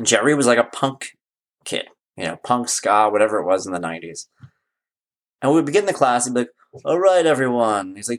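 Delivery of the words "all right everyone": put-on worn-out, weary teacher voice. Retelling how a teacher greeted a punk student in class, imitating a tired voice. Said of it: "he would say it like in this like tired thing".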